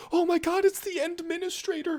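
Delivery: very high, embarrassed, cute moe voice. Retelling how a game character greets the Administrator: imitating Rossi's embarrassed moe voice. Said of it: "she gets super embarrassed and all moe".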